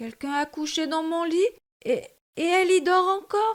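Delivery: high-pitched, surprised exclamation. Reading Goldilocks in French, voicing the bear's exclamation: surprised Baby Bear voice. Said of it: "s'exclama bébé ours tout surpris".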